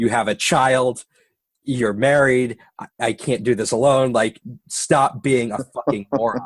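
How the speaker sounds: put-on screaming, reined in and held back. Retelling a road incident, quoting a wife: imitating someone screaming. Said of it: "my wife just started screaming at me".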